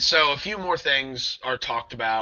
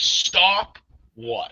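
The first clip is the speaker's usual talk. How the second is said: mock exasperated, fed up, irritated and pitched up; 5 semitones higher than usual. Retelling own reply while irritated during a ghost hunt: retelling an irritated reply. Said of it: "I'm very irritated".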